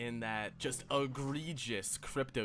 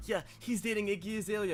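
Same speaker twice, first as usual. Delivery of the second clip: pitched-up voice cutting in over other speech; 8 semitones higher than usual. Mocking a podcast co-host who keeps butting in: imitating Mike butting in. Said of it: "Mike goes".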